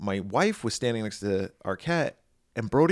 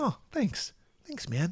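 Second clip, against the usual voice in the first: easygoing homespun aw-shucks manner, folksy, soft and high; 7 semitones higher, 5 dB quieter than usual. Retelling how he replied after you shook hands and said goodbye, in a David Arquette impersonation. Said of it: "that's my impersonation of David".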